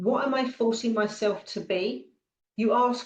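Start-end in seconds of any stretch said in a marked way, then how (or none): none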